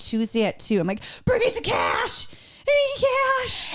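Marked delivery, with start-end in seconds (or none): 1.2-3.8 very high, swooping screaming. Retelling a phone call to a husband about a cash-only sale: imitating herself screaming. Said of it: "so I'm screaming at my husband".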